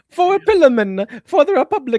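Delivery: mock Middle Eastern accent. Reading a viewer's message aloud after being asked to use an accent: put-on Middle Eastern accent. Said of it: "my Middle Eastern accent?".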